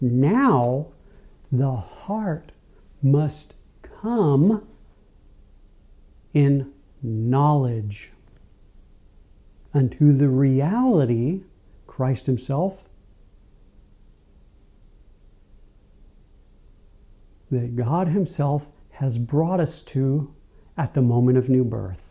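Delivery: said slowly, unhurried delivery. Addressing listeners, saying the line slowly so all can let it sink in. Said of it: "I said that slow".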